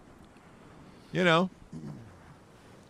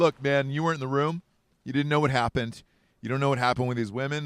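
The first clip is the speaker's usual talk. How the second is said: plain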